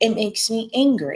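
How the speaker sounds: ordinary talk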